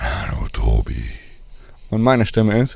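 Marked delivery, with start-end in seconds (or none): 0.0-1.0 rough, creaky put-on caped-hero voice. Comparing voices, showing how Batman sounds: Batman voice. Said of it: "Batman hat ungefähr eine Stimme, die geht so".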